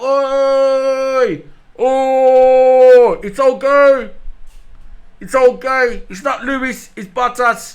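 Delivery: very slow, loud bellow, "Oi" long and stretched. Retelling calling mates back with a megaphone: retelling own shout. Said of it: "So I shouted".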